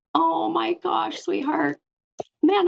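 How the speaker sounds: emotional, choked up, voice catching on words. Reacting to hearing another speaker's mother's name: choked up. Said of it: "I'm gonna get choked up".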